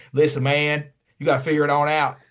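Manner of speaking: put-on broad, thick Southern Tennessee accent, laid on. Retelling advice from a random person from Tennessee, in a thick Tennessee accent. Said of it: "with a thick ass accent told me".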